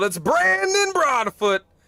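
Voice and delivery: very high-pitched, yelled announcer voice. Reading the starting lineup, name in all caps: yelling the name. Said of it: "so I gotta yell".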